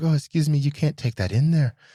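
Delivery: high-pitched lady's voice. Retelling a woman stopping him from taking his things in: Mrs. Doubtfire voice. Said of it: "She sounded like Juba Jahia Doubtfire".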